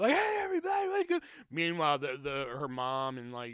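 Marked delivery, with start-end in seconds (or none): 0.1-1.2 put-on play-acted very high, rowdy, drunken yell. Retelling being a loud drunk on a porch: imitating his own drunk shouting. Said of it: "apparently I was just shouting".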